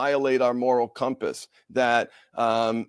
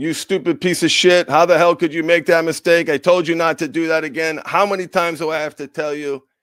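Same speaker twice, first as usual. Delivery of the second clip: put-on angry berating voice, higher and louder; 5 semitones higher, 5 dB louder than usual. Showing how a parent berates a child for a mistake: acting out an abusive parent. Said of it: "the energetic differentiation in those, in, in both those deliveries".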